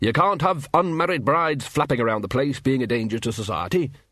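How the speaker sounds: usual speaking voice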